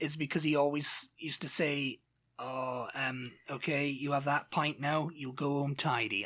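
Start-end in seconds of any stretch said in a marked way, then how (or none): 2.4-6.2 put-on older man's Bristol accent. Quoting John Tidy, an old guy from the pub: John Tidy's Bristol accent. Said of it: "I don't know why I'm doing it in a Bristol accent".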